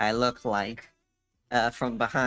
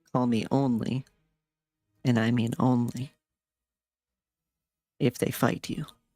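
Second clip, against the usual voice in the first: slow, deliberate stage whisper, each word weighed. Voicing a character who half-whispers back to a servant: half-whispering in character. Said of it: "I whisper back to him".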